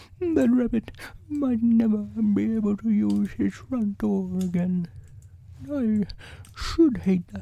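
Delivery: put-on very high, soft, sniffling little voice. A stuck bear speaks to the friends who came back, sniffing slightly. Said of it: "sniffing slightly".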